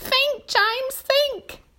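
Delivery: pleading. Reading a story aloud, the spider speaks to James; begging. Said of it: "begged the spider".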